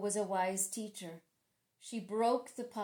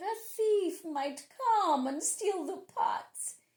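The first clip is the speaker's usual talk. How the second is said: sugary, honeyed, sweet, pitched-up voice; 8 semitones higher, 4 dB louder than usual. A man who plans to trick a woman speaks to her: sweet voice. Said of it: "he said in a sweet voice".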